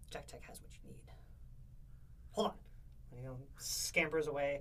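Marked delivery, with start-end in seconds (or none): 0.1-2.5 through-teeth character voice, much quieter. Voicing the character Jack replying to the group, talking through his teeth. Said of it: "he talks through his teeth".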